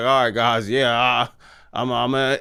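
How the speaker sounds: low, halting, sarcastic, dismissive delivery. Imitating The Rock trying to get off the phone: imitating The Rock being sarcastic. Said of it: "kinda being sarcastic".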